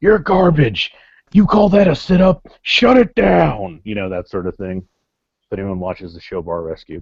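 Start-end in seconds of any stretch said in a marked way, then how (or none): 0.0-3.8 full-throated drill-sergeant bellow, slow, high, top of lungs. Retelling a stand-up bit, doing the John Taffer impression yelling. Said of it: "the John Taffer impersonation of me just yelling at the top of my lungs".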